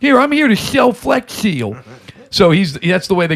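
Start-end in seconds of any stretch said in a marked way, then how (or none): 0.0-1.8 wet, slushy S lisp throughout, higher pitch. Speaker describing a commercial, doing a Flex Seal pitchman impression. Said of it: "has like the Slurpee S stuff".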